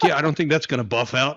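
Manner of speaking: put-on Southern accent, drawled. Retelling an AI video where a crashed alien speaks: imitating a Southern accent. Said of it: "the alien has a Southern accent".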